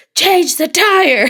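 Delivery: put-on forceful voice, very high, loud and shrill. Re-enacting the voice that finally came through when she wasn't listening, retelling the loud voice. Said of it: "so the loud one came through".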